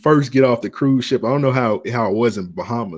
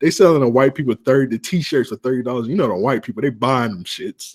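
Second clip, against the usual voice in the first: ordinary delivery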